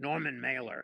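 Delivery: rough, very gruff voice. Retelling a surprise phone call from Norman Mailer: imitating Norman Mailer's gruff voice. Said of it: "a very gruff voice says to me".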